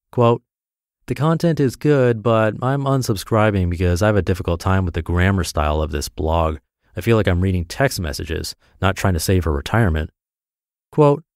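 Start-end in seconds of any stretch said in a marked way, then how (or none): none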